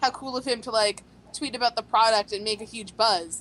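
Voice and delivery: ordinary talk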